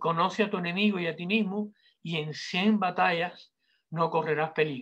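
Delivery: ordinary delivery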